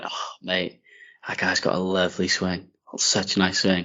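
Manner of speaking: hushed, admiring whisper. Retelling what was said to a friend behind the tee: imitating a whisper. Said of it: "I whispered to you".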